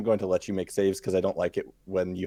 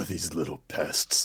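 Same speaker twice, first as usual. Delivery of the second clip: low deep voice, lower and quieter; 4 semitones lower, 5 dB quieter than usual. Voicing a character slashing at swarms like gnats: deep voice. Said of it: "Oh, the voice is so deep".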